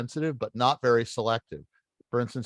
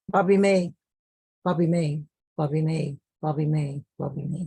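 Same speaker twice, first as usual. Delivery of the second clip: progressively quieter with each repetition; 3 semitones higher than usual. Showing a listener how to repeat a name five times, getting quieter each time. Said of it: "every time you do, get quieter".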